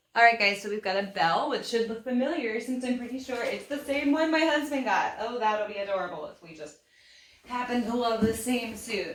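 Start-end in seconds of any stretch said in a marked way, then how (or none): 5.2-9.2 dry, tongue-in-cheek sarcastic delivery. Reacting to trying on the same suit the husband got: sarcastic. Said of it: "Definitely being sarcastic here".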